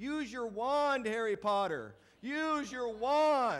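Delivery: all-out, very loud, very slow, drawn-out high yell. Retelling how a moviegoer yelled at the screen: imitating someone yelling loudly. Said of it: "he would yell out as loud as he could".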